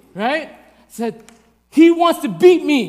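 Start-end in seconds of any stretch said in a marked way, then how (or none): 1.8-2.9 high, very loud, drawn-out screaming. Retelling calling to his grandma while screaming at a guy, retelling screaming. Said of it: "I'm like screaming at this guy as I'm saying it to her".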